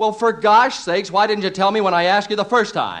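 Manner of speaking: fed-up, exasperated shouting outburst. Asking an old man why he didn't say so the first time, shouting. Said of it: "You shouted at me".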